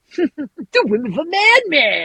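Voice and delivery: put-on Midwest accent, very high pitch, drawn out. Quoting a villain's movie line: Dennis Hopper impression, Midwest accent. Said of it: "It's such a Midwest accent".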